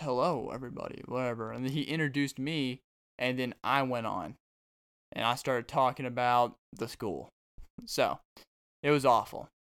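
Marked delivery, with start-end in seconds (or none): 0.0-1.0 imitated radio announcer voice. Recalling going on the radio, the radio voice greets everybody, radio announcer voice. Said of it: "the radio voice goes".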